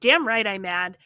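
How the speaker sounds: ordinary delivery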